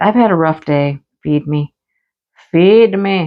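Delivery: whiny, begging, hungry dog voice. Voicing a hungry whining dog asking for food: voicing the dog Tifa. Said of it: "She's like".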